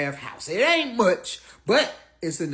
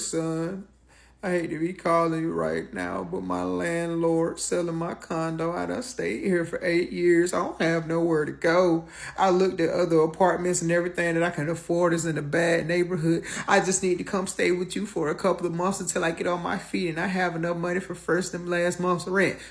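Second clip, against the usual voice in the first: mock gloomy, somber, pitiful pleading tone. A son retells his mother's phone call to him, imitating her somber voice. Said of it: "with that old somber voice".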